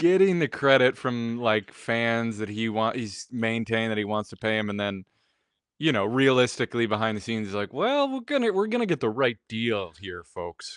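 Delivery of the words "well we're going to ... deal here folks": put-on, sing-song, swooping Wisconsin accent. Acting out what he says behind the scenes, in a put-on Wisconsin accent. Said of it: "him a Wisconsin accent".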